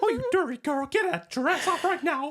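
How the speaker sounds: high, loud squeaky voice. Joking around with Olivia, the speaker launches into a Mickey Mouse voice. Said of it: "you didn't know I could do Mickey?".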